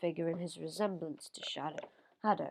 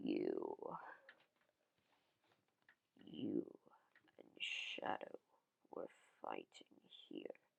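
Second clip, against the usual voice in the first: sort of scary, hushed, fast whisper; 11 dB quieter than usual. Narrator reads Mephiles speaking to Zero, in a sort of scary voice. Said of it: "Mephiles says in a sort of scary voice".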